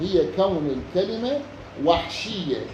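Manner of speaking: ordinary talk, nothing marked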